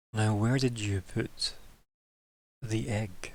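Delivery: slow, faintly hollow-sounding voice. Storyteller voicing a figure who pulls the listener closer: hollow-sounding voice. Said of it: "slightly kind of hollow sounding voice".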